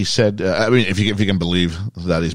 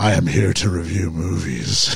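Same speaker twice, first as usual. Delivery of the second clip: put-on husky superhero-style voice; 2 semitones lower than usual. Mimicking how Megs sounded last week, in her husky voice. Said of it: "It sounds more like you're here to bring justice to Gotham City".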